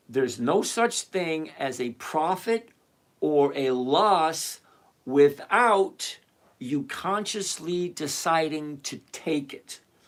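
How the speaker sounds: very slow, deliberate, word-by-word, "loss" drawn out. Explaining to someone who doesn't realize, saying it really slowly so they understand. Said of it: "I want to say it really slowly".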